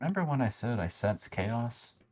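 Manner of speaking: secretive, hushed whisper. Whispering in character to the other party members: whispering to the party. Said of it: "I'm gonna go ahead and whisper to the party members".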